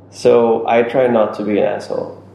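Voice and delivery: ordinary delivery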